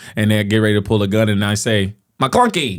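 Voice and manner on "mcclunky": high-pitched, put-on creature voice. Acting out a cantina scene, playing one character: Greedo voice. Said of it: "I'll be Greedo".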